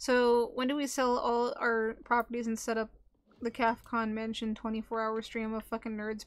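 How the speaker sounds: normal talking voice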